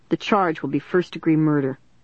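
ordinary delivery

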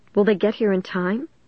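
plain reading voice

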